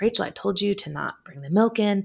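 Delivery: exasperated, frustrated, sharp snapping tone. Retelling how a frustrated mom reacted to spilled milk: imitating mom snapping. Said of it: "she snaps at me like".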